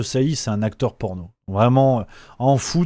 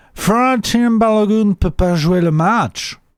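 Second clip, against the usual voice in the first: bad, loud, slow, booming put-on American accent; 8 semitones higher, 5 dB louder than usual. Telling a story about a president's morning remark: bad Trump impression, American accent. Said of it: "Je fais les imitations, c'est Trump, il fait ça comme ça".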